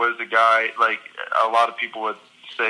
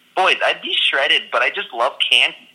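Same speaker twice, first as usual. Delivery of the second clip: slightly squeaky speech; 4 semitones higher than usual. Retelling what a teammate said leaving the body fat pod: imitating a teammate's squeaky voice. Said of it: "it's kind of a squeakier voice".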